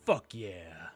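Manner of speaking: deep orcish monster voice. Voicing a Kenku mimicking a voice: deep orcish accent. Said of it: "goes in a deep sort of orcish accent".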